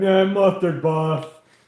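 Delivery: very loud dumb-guy yell. Retelling friends driving around, one screaming at a passing bus, stereotypical dumb guy voice. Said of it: "in like our stereotypical dumb guy voice, screamed out".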